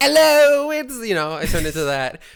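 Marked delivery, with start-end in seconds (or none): 0.0-0.9 put-on British accent, higher and louder. Retelling turning into an english fellow at the fair: imitating own british accent. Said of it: "a British accent, so I just did that".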